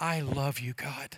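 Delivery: hushed, very slow, barely audible murmur under breath. Retelling what someone said during worship: imitating someone speaking under breath. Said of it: "just under her breath".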